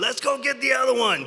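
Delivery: very high-pitched, loud, shrieking yell. Retelling a shout from the bridge after landing a fish: retelling own scream. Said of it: "And I'm screaming".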